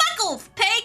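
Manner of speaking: put-on gremlin child voice. Ringing a doorbell in a game, answering as Kuno: Kuno impression. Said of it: "I'm gonna do the Kuno thing".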